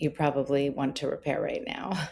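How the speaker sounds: soft, play-acted, sheepish little voice. A parent retells what her daughter said on walking into her room, imitating a sheepish tone. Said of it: "kind of sheepishly".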